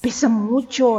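words trembling out in frightened voice. Narrator reads the maid's reply to Jordan, trembling. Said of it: "articuló la sirvienta sin dejar de temblar".

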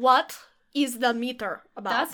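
put-on Russian accent. Asked to do a German accent, slipping into a fake Russian accent. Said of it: "That's Russian".

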